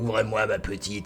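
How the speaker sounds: hushed, put-on demonic voice. Describing a film, the speaker imitates the scarred mother at the door in a demon voice. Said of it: "elle parle avec une voix de démon".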